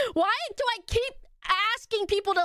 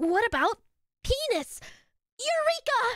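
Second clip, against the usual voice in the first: anime-style delivery, higher pitch; 5 semitones higher than usual. Reacting to an old out-of-context clip: anime character voice. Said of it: "Why did I say it like an anime character?".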